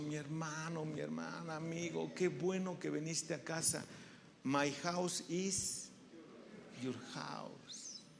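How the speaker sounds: warm, soft, very affectionate loving tone. Welcoming someone who came to the house: warm and affectionate. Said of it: "en un tono de voz muy cariñoso".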